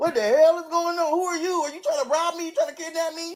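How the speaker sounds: put-on freaked-out, very high, spooked alarm. Retelling waking up to a stranger knocking on the window, acting spooked. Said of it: "I'm legit spooked".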